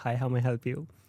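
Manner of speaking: put-on rude, blunt-sounding delivery. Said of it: "I sound, like, very much rude".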